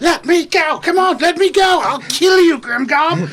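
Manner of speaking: shrieking, very high, very loud scream. Voicing a character struggling to break free: Arlie screaming. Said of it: "you can hear Arlie just screaming".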